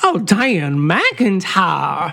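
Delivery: Southern US accent. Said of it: "we can finish 'em off that way".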